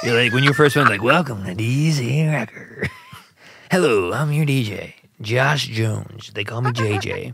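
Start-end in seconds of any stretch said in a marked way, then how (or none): 1.0-7.3 very slow, drawn-out underground college-radio DJ patter. Teasing the other speaker about how they first introduced the show, imitating a college radio DJ. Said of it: "like it's some underground college radio station".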